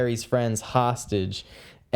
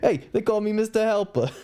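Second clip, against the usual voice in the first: put-on New Jersey accent, pitched up; 9 semitones higher than usual. Describing a character, speaker does his line in a Sopranos-style New Jersey accent. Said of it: "New Jersey accent".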